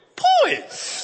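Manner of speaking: voice breaking mid-word on "poise". Retelling reading the last vocabulary word aloud in class: imitating own voice cracking. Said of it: "it was the worst crack".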